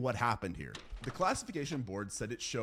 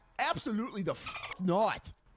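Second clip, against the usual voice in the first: very high, pitched right up, put-on Australian accent; 9 semitones higher than usual. Speaker describing a horror game scene, reacting in an Australian accent. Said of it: "That's my Australian accent".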